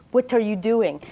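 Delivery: put-on speaking English with an Israeli accent. Retelling a man coming up behind you at your computer, Leor's crazy Israeli accent. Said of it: "Leor has a crazy Israeli accent".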